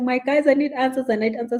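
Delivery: put-on high, weepy voice through tears. Retelling how a lady who came pleaded for answers: imitating someone crying. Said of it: "She was literally, you know what, like, crying".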